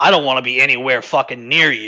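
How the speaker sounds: hostile, glaring tone of voice. Voicing a character who says this while glaring at her: glaring, hostile line. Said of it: "he says, kinda glaring at her".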